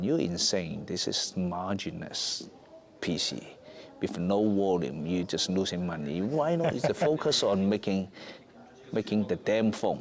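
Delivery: ordinary delivery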